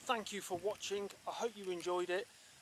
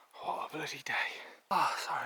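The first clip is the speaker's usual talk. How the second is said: whispered, breathless gasping, out of breath. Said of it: "I'm a bit out of breath".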